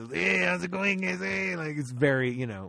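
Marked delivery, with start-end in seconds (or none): 0.1-1.5 rough-edged, high, creaky cartoon spider voice. Imitating the spider character in a ride, voiced by Cheech Marin. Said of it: "the impression I just did".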